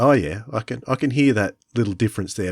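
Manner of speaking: ordinary talk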